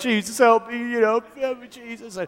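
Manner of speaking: put-on sobbing voice. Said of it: "but I am praying".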